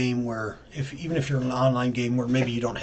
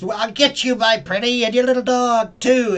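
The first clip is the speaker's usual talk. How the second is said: put-on witch voice, much higher, slower; 7 semitones higher, 6 dB louder than usual. Speaker demonstrates vocal registers with film characters, Wicked Witch voice. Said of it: "You have the cowardly lion".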